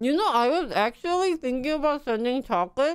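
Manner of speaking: talking with mouth full. Eating while chatting with the group, talking with mouth full. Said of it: "Sorry to talk with my mouth full".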